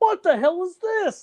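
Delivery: very high, slow, baffled adult squeak.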